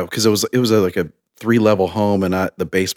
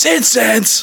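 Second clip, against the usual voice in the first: overblown, very high-pitched overreacting outburst; 4 dB louder than usual. Recalling how you'd answer when asked about a smell: mock overreacting outburst. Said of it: "I'd like overreact and just be like".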